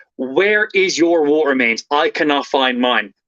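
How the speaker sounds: ordinary talk, nothing marked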